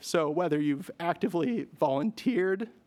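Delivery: voice breaking and cracking mid-phrase. Giving a thank-you speech to the Brooks community, voice cracking. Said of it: "that voice crack".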